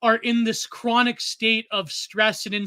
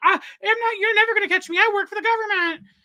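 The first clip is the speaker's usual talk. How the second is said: play-acted, delusional-sounding, very high, annoying taunting shriek; 12 semitones higher, 3 dB louder than usual. Retelling a hacker's delusional video: imitating someone screaming. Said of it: "screaming, and he's like".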